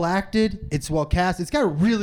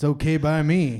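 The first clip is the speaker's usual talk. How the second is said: put-on very old man voice. Quoting a line from the movie trailer: Clint Eastwood impression. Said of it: "That's not a good Clint Eastwood".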